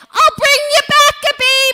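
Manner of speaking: shrill, high-pitched yell at the top of the lungs. Retelling being rushed down a hospital ward on a gurney: imitating a yell at top of lungs. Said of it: "I'm yelling, at the top of my lungs".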